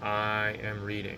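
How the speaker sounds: normal talking voice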